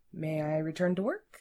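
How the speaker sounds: ordinary delivery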